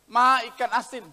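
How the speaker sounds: usual speaking voice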